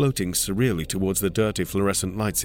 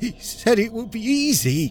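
very high, croaked-out words. Narrator reads the words of a man sliding down the wall; croaking. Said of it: "he croaks".

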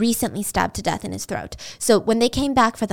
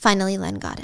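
ordinary talk, nothing marked

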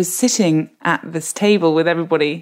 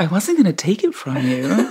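put-on swooping, lilting American accent. Retelling what she said after dropping her apple crumble: Meryl Streep's American accent. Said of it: "she went back to her American accent".

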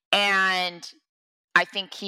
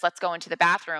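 ordinary talk

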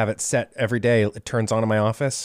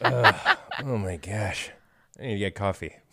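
put-on grumbling voice; 3 dB quieter than usual. Showing a customized morning wake up: put-on dad grumbling. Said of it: "It's just a dad grumbling".

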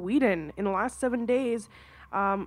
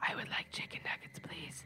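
very soft eerie whisper, barely above breath; 6 semitones lower, 15 dB quieter than usual. Reading a ghost story aloud, a voice from the closet: whispering. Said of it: "I heard a voice whisper".

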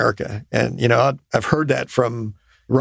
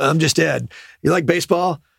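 crusty navy master chief voice, pitched up; 5 semitones higher than usual. Retelling what Ed Harris said to a young production assistant: crusty Ed Harris voice. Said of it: "He's crusty and sounds like a Master Chief".

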